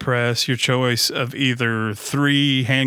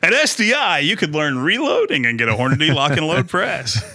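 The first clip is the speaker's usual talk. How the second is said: fake, swooping TV commercial sales pitch voice; 3 semitones higher than usual. Joking about turning the chat into an infomercial: mock infomercial voice. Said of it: "I was gonna turn it into an infomercial".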